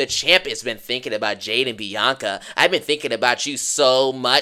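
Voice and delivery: mocking, low-pitched voice.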